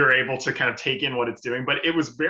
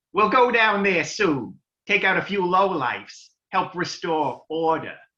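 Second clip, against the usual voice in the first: nerdy, annoying, pitched-up voice; 5 semitones higher, 4 dB louder than usual. Acting out Carl's line in a conversation: nerdy, annoying JFK voice. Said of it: "A nerdy, annoying JFK".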